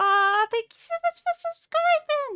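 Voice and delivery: squeaky, really high-pitched, excited gushing. Thanking a viewer for subscribing: really high pitched. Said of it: "that was really high pitched".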